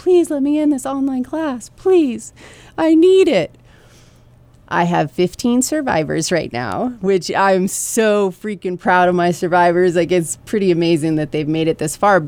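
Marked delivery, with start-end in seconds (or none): 0.0-3.5 desperate, very high-pitched pleading. Teacher retelling extra students begging to join her online class: imitating students begging. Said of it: "additional students like begging".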